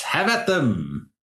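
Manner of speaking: called out, light and high. Voicing a distinctive beetle appearing at the front of a force: in-character shout. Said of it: "And he shouts".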